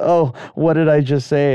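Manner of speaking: ordinary delivery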